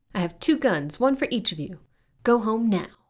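lines hollered out full and loud. Susie spins on her stool pointing pretend pistols at the breakfast table, hollering. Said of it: "Susie hollered the lines".

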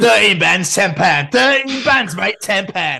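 loud Cockney market trader patter. Joking about a gig's ticket price: Cockney market seller voice. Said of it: "You sound like a proper Cockney market seller then".

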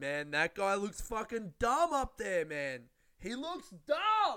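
put-on rowdy, drunken, swooping high yell. Recalling yelling at the people upstairs while drunk, retelling a drunk yell. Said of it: "I was just yelling like".

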